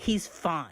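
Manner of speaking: mock cutting, hostile, sharp, angry tone. Retelling a hostile woman's reply to the speaker, imitating an angry, sharp voice. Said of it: "she angrily says, ... loud, sharp, embarrassing voice".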